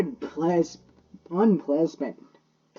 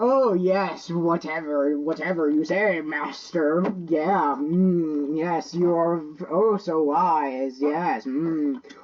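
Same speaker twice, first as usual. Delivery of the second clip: snide, mocking, sarcastic, drawn-out "mm". Showing how they act when being super sarcastic: sarcastic mocking tone. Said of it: "I am being super sarcastic. I am like".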